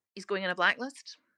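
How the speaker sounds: plain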